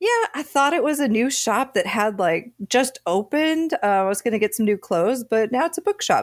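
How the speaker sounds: super casual, nonchalant, offhand, no-big-deal tone. Retelling what a woman said after the shop changed: imitating a nonchalant tone. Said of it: "she very nonchalantly said that".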